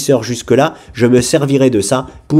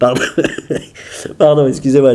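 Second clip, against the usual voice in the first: talking through laughter. Apologizing after a sudden outburst, laughing while talking. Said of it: "je rigole".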